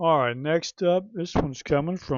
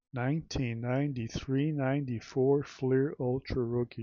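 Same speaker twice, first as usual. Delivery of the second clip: normal talking voice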